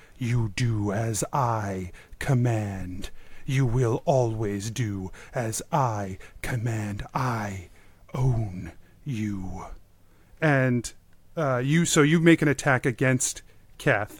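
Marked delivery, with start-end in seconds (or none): 0.2-9.6 low pitch, every word stretched out. Voicing the Shadow Lord's words heard again by a player: Shadow Lord voice. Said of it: "You hear his voice".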